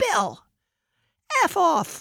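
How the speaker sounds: all-out top-volume yell, loud, high and swooping. Retelling how a woman yelled at Bill in a crowded CIA hallway, loud yell. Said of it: "She says in her loudest, loudest voice".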